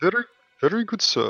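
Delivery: Indian accent, pitched very high. Friends try to do their best indian accents; one joins in with an indian accent. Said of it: "Who who can do the best Indian accent?".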